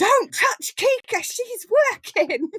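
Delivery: put-on very high small-child shout. Retelling how a four-year-old stopped a teacher petting the dog: imitating a small child yelling. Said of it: "this tiny little four-year-old yells at her teacher".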